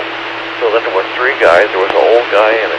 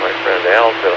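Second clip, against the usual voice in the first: ordinary talk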